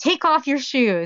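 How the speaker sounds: rough-toned, harsh, high-pitched delivery. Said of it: "and imitated me".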